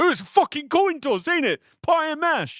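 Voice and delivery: put-on very high-pitched, hard-strained American accent. Retelling a scene, imitating Jared Harris really trying an American accent. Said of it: "really trying with the American accent".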